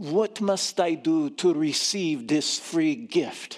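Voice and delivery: put-on Romanian accent. Retelling what a woman in her store asked, in Romanian accent. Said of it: "She says in a Romanian accent".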